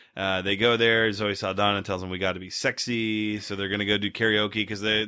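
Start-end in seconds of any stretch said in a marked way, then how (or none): none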